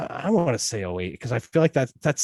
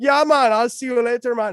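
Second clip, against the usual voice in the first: put-on Jamaican accent, easygoing rhythm, pitched up; 12 semitones higher, 6 dB louder than usual. Recounting a joke that others called racist, Jamaican accent. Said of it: "That's how Jamaican people speak".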